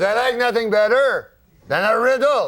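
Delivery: put-on speaking with a French-Canadian accent. Retelling a story, quoting uncle Jean-Luc: imitating uncle Jean-Luc's voice. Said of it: "That's how he talks".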